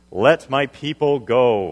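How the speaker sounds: grand declaiming voice, very slow and loud. Retelling Moses telling Pharaoh, in Charlton Heston voice. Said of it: "in my best Charlton Heston voice".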